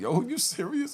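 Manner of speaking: very high-pitched words through hysterical laughter. Speaker recalls answering a serious counselor in his office, retelling laughing hysterically. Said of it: "I started laughing hysterically".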